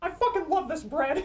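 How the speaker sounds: very high-pitched, cartoonish character voice. Delivering a line someone paid a dollar for: Zhao voice. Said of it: "in the Zhao voice".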